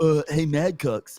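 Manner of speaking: loud, dopey dumb-guy voice. Retelling how a copycat does the same dumb guy voice: Mad Cucks dumb guy voice. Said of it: "does this whole".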